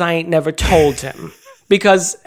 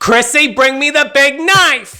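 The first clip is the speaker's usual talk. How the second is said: put-on male scream, higher; 8 semitones higher than usual. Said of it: "He screams at Chrissy".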